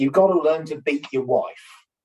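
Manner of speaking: ordinary talk, nothing marked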